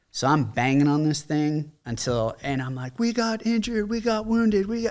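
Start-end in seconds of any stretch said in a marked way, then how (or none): 3.0-4.9 put-on, desperate, very high shrieked screaming. Retelling banging on a closed gate for medics: retelling own screaming. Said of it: "I'm screaming at this point".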